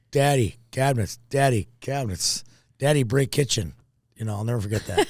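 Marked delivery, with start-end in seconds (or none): 0.1-3.7 put-on toddler babble, simple broken words. Retelling what the eighteen-month-old son said: imitating toddler son Jake. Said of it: "And Jake was, like, going".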